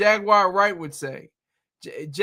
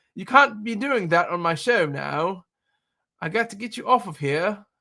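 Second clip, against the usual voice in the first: terrible, clumsy put-on English accent. Still retelling how Piers Morgan reacted to a guest on his show, terrible English accent. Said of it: "That's my terrible English accent".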